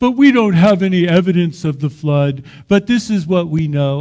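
play-acted loud, scoffing, dismissive, skeptical commentator tone. Retelling what a commentator said, imitating a skeptical, mocking commentator. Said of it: "the commentator's got this kind of skeptical, mocking voice".

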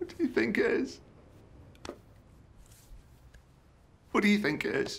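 very high, tearful, sobbing voice. A woman presses a man with the same question, crying.

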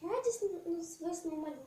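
ordinary delivery, nothing marked

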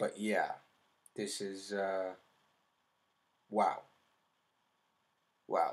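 holding back tears. Speaking on camera after the Snowpiercer comparison, holding back tears. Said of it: "I'm trying not to cry on camera".

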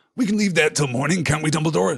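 said with harshness. Sirius answers Dumbledore, who wants to question Harry; harsh. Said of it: "said Sirius harshly".

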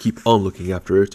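plain

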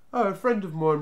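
breezy, airy, light, offhand. Replying to the eldest Snarget's suspicious question, airily. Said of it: "replied Barney airily".

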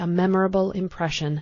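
ordinary delivery, nothing marked

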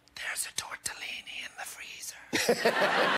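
slow, soft, hushed, drawn-out whisper. Retelling what an older woman said about food: imitating a whisper. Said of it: "just whispering to me about food".

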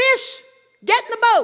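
high, loud voice.

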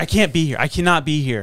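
ordinary delivery

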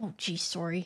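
put-on low-pitched Canadian accent. Apologizing, then noting it came out Canadian, Canadian accent. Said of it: "Said like a Canadian".

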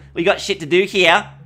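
light, nasal, very high Australian voice. Imitating own old recorded voice, light and nasal: imitating own old light nasal voice. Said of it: "look how light and Australian I sound".

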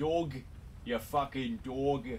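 put-on Australian accent. Asking how to say it with an Australian accent, then trying: Australian accent. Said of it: "How do you say that with an Australian accent?".

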